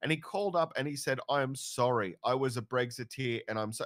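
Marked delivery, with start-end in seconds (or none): 1.3-3.8 put-on tearful crying voice. Retelling a caller's apology on a radio talkback program: imitating someone crying. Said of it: "he's crying on the phone".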